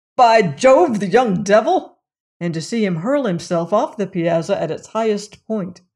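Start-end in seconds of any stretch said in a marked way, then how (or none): 0.2-2.0 sudden, loud, violent outburst. A host suddenly cries out, surprising his guest; exclaiming with violence. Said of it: "exclaim with violence".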